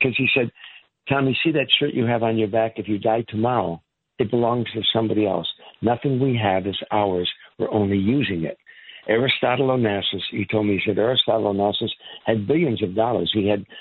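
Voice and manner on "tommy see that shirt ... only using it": ordinary talk, nothing marked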